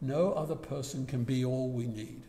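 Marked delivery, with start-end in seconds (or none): none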